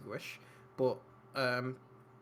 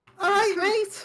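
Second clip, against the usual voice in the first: put-on kid character voice, higher pitch and louder; 12 dB louder than usual. Voicing a kid the players meet: voicing a kid. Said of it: "You see Johnny".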